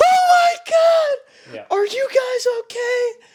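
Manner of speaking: put-on near-tearful panic, very high, very slow. Retelling how a mom reacted after the four-wheeler hit them: imitating someone freaking out. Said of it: "Freaking out, like, verge of tears".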